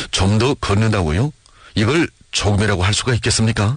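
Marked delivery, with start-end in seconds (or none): none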